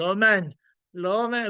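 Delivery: put-on flawless French accent. Someone repeats how a man quoted a film name, in perfect french accent. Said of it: "quotes it like in perfect like French accent".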